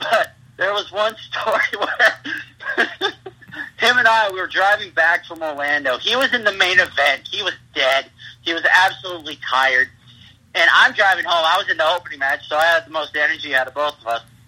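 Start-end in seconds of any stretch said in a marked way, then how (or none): 0.0-2.8 laughing through the words, high and slow. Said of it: "I don't mean to laugh".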